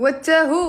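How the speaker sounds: very loud owl hoot in a Moroccan accent. Speaker announcing and doing a bit for the others: Moroccan owl impression. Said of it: "my impression of an owl from Morocco".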